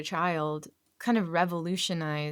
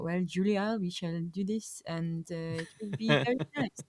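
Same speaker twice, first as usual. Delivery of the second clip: calm, peaceful, soothing voice. Speaker imagines Jacques cooking chicken with Julia, Jacques voice. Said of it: "I'm I'm doing the voice".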